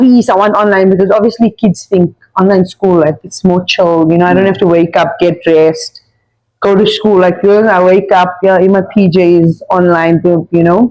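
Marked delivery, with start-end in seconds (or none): 0.0-0.9 mock pleading, begging tone. Retelling how the son asked for online school: imitating son begging. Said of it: "he begged me, he's like".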